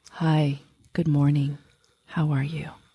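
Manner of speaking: on-air public-radio announcer voice. Greeting someone good morning, trying it again in an NPR voice. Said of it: "I'm not using my N P R voice. Let me try that again".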